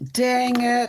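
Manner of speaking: shrill, very high-pitched outburst. Answering when asked what the other speaker says: imitating dj saying dang it. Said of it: "What does he say, Bob?".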